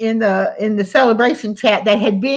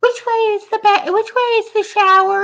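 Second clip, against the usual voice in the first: really odd, weird, high-pitched put-on voice; 12 semitones higher than usual. Retelling what a man said after coming up behind the speaker on camera, really weird voice. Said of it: "In this really weird voice".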